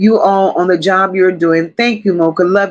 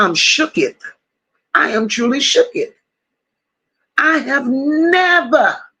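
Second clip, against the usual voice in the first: stunned, put-on character voice; 5 semitones higher than usual. Reacting to chat messages, saying it in Big Perm's voice. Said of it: "in Big Perm's voice right now".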